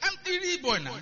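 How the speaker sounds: eager voice breaking into laughter.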